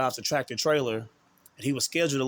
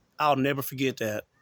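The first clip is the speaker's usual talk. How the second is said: ordinary delivery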